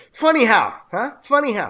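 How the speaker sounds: loud, swooping, heavy Italian mob-style accent. Talking about his Italian mob accent, doing a Joe Pesci mob accent. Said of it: "what Italian mob accent do you".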